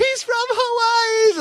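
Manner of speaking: very high, eager, attention-grabbing yell. Retelling how the old lady with them tried to get someone's attention, imitating Keiko yelling. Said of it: "Like she's like yelling at".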